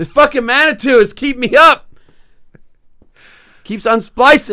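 loud shout, pitched high.

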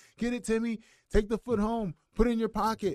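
very high scream at the top of the lungs. Retelling how the young guy in his corner yelled during his win, imitating someone screaming. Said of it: "he is screaming at the top of his lungs".

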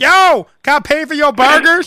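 loud, high-pitched yelling. Describing a shirtless man calling out to a woman loading her car, retelling a yell. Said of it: "he's yelling".

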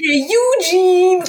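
high, slow, drawn-out calling voice.

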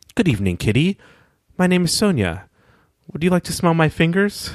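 even, friendly tone. Narrator reads Sonya greeting Kittee at the door, in a level, friendly voice. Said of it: "Sonya says in a level, friendly voice".

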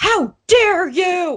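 put-on very high, loud, railing drunken heckling yell. Retelling how drunk fans behind them reacted: imitating drunk fans yelling. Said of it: "yelling, railing on this pitcher".

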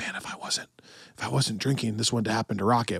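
put-on under-the-breath mutter. Speaker acts out a character's tiny line, imitating someone muttering under his breath. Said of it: "under his breath where he's like".

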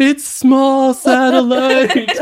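very high, shrill, loud hollered yell. Acting out a man dragged out by security guards: imitating someone yelling. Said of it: "he's yelling".

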